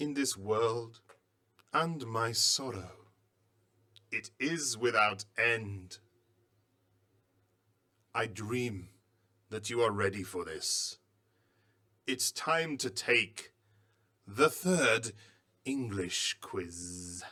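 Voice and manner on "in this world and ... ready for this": dramatic, theatrical reading voice, louder. Reading aloud a poem found with a mummy: dramatic acting voice. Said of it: "I'm gonna use my acting voice".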